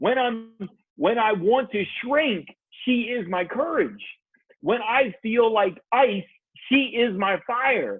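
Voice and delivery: emotional, tearful delivery. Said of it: "my eyes are welling up right now".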